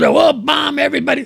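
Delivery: creaky, careless half-shout. Retelling what Pete Hegseth says up there: imitating Pete Hegseth screaming. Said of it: "just gets up there and screams".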